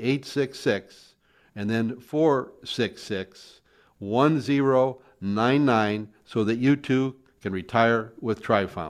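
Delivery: very slow, deliberate delivery, each digit said separately. Host repeats the phone number for listeners to call, very slow. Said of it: "Let me say that again very slowly".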